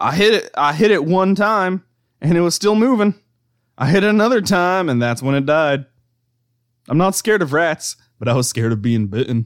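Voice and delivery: put-on high, loud Southern accent. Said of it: "I like that you went for Southern accent".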